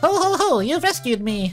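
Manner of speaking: put-on young boy character voice. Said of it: "hey, I got it".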